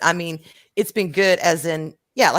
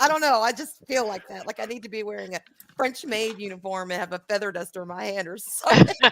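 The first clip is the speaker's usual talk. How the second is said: ordinary delivery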